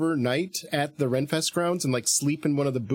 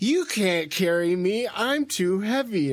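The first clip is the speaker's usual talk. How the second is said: mock, very slow, high, drawn-out teasing tone; 6 semitones higher than usual. Retelling how they mocked the woman carrying them, acting out the mocking words. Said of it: "I was mocking her".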